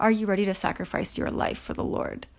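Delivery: fast, wicked, menacing voice. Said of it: "with I'm talking like wickedness in his voice".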